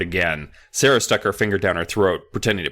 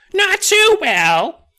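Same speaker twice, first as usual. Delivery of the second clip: very high, shrill ventriloquist-dummy voice, pitched way up; 4 dB louder than usual. Reading a story, the narrator answers for his dummy, high shrill Dennis voice. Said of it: "in a high, shrill voice".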